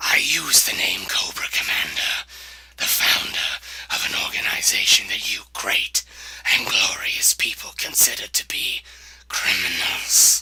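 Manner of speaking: menacing, sinister, breathy near-whisper villain voice. A leader introduces himself to the public, a little more sinister. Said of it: "a little more sinister sounding".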